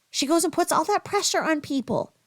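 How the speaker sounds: plain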